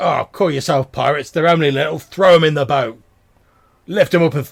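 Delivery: very loud, rough, gruff bearded-man bellow. Retelling a man talking to someone next to him, gruff man's voice. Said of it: "the gruff voice of this bearded fellow".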